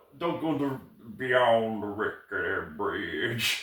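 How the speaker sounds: Southern drawl, dropped low and deep. Recapping a scene, the speaker does a character's line in a deep southern drawl. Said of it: "the deep, the, the random southern drawl".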